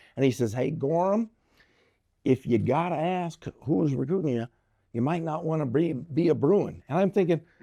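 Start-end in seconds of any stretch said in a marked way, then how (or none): 0.6-6.9 put-on Southern drawl, higher in pitch. Retelling what the coach said on a recruiting visit: Southern drawl. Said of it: "he had that Southern drawl".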